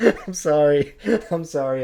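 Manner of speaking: giggling, slow words broken by laughter, can't keep composure. Apologizing while unable to keep a straight face: laughing while talking. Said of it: "I can't keep a straight face".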